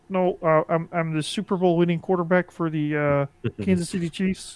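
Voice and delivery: raspy frog-like voice. Insisting to the group who he is, doing a Patrick Mahomes impression. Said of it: "you're you're Kermit the Frog".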